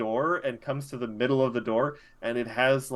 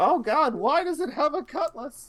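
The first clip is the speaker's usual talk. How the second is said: put-on very high, high-pitched elderly man's cry. Voicing a man panicking as bees swarm him: old man voice. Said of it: "You hear an old man voice".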